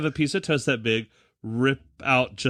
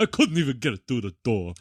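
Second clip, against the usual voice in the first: put-on old stand-up comic delivery, complaining tone. Quoting a line from the story: Rodney Dangerfield impression. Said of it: "Doing his best Rodney Dangerfield impression".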